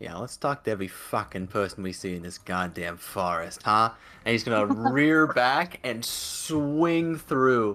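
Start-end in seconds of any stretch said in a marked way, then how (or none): 0.0-3.9 low grumble muttered under the breath. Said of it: "kind of mutter under his breath".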